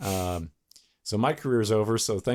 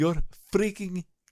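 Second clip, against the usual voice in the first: put-on Indian accent; 5 semitones higher than usual. Speaker performs a message right after refusing to read a script, put-on Indian accent. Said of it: "We're just doing Indian voice?".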